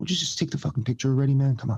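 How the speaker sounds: voiced, confidential, half-whispered stage whisper. Retelling what a celebrity said to a pushy fan: imitating a half-whisper.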